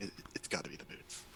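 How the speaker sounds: very quiet, breathy whispered aside. Voicing a character who leans over to another: whispering. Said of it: "leans over to Toker and whispers".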